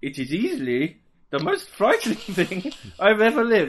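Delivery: put-on Irish accent, high and loud. Retelling what a man said, at another speaker's request, in an Irish accent. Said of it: "I'll do an accent. Irish".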